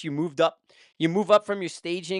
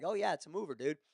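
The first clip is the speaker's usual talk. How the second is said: mock very quiet speech, laughing through the words; 12 dB quieter than usual. Retelling what the ro said: imitating someone laughing while talking. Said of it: "laughing, he's like".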